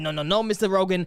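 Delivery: ordinary delivery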